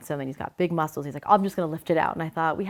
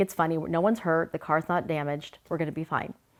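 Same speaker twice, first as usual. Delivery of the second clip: ordinary talk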